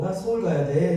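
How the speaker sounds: light touch of Seoul intonation mixed in. Retelling how they answered friends about going to Seoul, slight Seoul intonation. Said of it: "약간의 서울 인토네이션을 섞어서".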